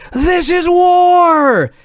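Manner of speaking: mock frantic announcer scream, very high, "war" drawn out. Retelling a wrestling broadcast moment, imitating Tony Schiavone screaming. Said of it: "and he's screaming".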